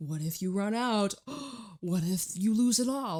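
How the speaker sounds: fretful, anxious little voice, rising in pitch. Voicing the old inner story about running out of money: imitating an anxious inner voice. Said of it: "that little anxious thought".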